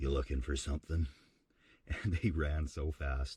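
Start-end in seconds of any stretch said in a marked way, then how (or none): 0.0-1.1 groggy, gravelly, freshly woken voice. Retelling sitting up in bed as guys came in the back door, in a put-on just-woken gravelly voice. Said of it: "just woken up, gravelly voice".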